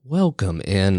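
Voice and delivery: on-air broadcaster voice. Podcast host greeting listeners at the show's start, radio announcer voice. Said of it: "all radio voice like".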